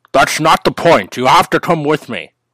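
put-on Scottish accent. Future self confronting his past self in a sketch, doing a Sean Connery impression. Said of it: "Why do you sound like Sean Connery?".

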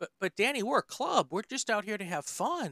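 high-pitched, mock-earnest sarcastic delivery. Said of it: "I'm being, um, sarcasm".

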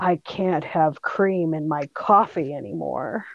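faint, weak half-whisper, barely any strength. Retelling a friend's words from the ICU: imitating a half-whisper. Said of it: "she whispers in my ear".

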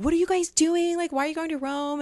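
put-on shrill, very high scream. Recounting boarding a red-eye flight, retelling a scream over someone's head. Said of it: "literally screaming this over someone's head".

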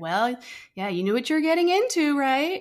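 high, condescending, know-it-all told-you-so tone. A stepmother repeats what stepmothers keep hearing; mocking a condescending tone. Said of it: "it's always in that condescending tone too".

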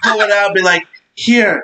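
playful, high, gleeful mock vampire voice.

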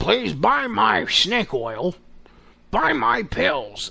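creaky, drawn-out put-on voice. Mocking own sales plea for shopping links: Alex Jones voice. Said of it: "I'm sounding like, uh, uh, fucking Alex Jones".

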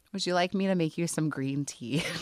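mock dead serious, very sincere and earnest tone. Retelling what Melinda said to an upset friend, imitating her very serious tone. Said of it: "very, very serious".

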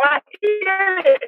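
very high, slow, thrilled excited yell. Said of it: "she would yell".

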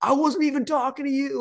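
very high-pitched, furious screaming yell. Retelling screaming at a ref during a 6-0 game: retelling a scream. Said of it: "Like I'm screaming at him".

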